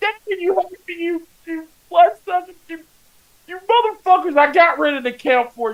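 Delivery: mock very high-pitched tearful wail. Retelling own words while killing Dracula: retelling own crying. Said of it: "I'm sitting there crying as I'm killing Dracula".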